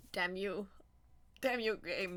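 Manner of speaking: loud, tearful crying, voice breaking. Playing a game and overwhelmed by how beautiful it is, scolding it while crying. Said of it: "I'm crying".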